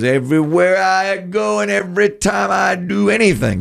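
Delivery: high, creaky voice.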